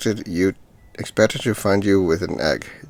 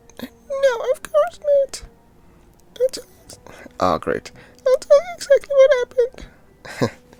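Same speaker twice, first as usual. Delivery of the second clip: put-on very high, swooping childlike little girl voice. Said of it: "I keep making the damn voice".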